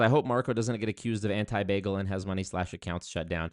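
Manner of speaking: ordinary talk, nothing marked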